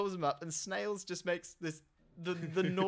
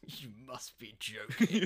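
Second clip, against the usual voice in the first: put-on scornful scoffing, slow and drawn out; 6 semitones lower than usual. Retelling a film character's line to Snails: imitating a scoffing line. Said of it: "scoffs and says".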